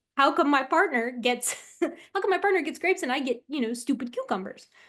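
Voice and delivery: outraged, indignant griping. Narrating a fairness experiment video, voicing the capuchin: imitating an angry capuchin. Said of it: "they're mad about it".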